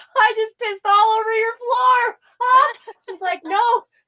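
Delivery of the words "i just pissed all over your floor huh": play-acted, very high-pitched, laughing through the words. Retelling apologizing to a receptionist while high, reenacting laughing while talking. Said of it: "and I start laughing because I'm high".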